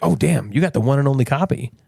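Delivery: plain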